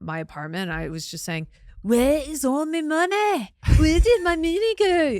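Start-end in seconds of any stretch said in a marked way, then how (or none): 1.8-5.2 put-on Scottish accent, very high, loud and slow. Recalling practicing alone while walking around the apartment: scottish accent. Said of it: "I've just always wanted to do a Scottish accent".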